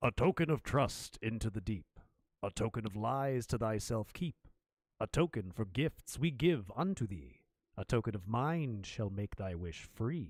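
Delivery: deep, low, otherworldly voice intoning. Game master voices the well as the players approach it again: booming voice. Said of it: "a booming voice".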